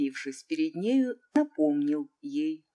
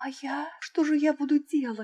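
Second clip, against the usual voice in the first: very high, alarmed, frightened voice; 11 semitones higher than usual. Narrator reading the princess's reply while she dances, frightened. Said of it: "испуганно заметила принцесса".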